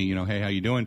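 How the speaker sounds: ordinary delivery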